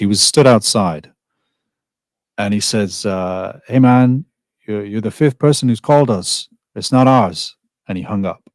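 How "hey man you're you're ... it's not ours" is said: put-on speaking with a Spanish accent.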